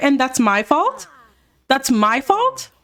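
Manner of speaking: heated, argumentative tone. Recounting a scene, the speaker acts out a woman's reply mid-argument: retelling an argument. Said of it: "So they're arguing".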